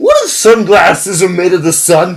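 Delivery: put-on dumb, dim-witted voice with swooping pitch. Speaker poses a ridiculous question in a dumb voice. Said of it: "the dumb question in a dumb voice".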